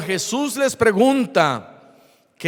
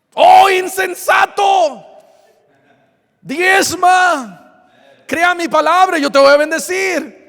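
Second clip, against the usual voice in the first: mock scolding tone, very high and raised; 9 semitones higher, 6 dB louder than usual. A speaker acts out Jesus answering a complaining believer: mock scolding as Jesus. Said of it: "¿por qué me estás regañando?".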